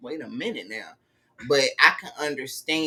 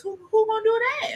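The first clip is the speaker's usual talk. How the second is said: very high, put-on reality-show housewife voice; 4 dB louder than usual. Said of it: "In my Portia voice".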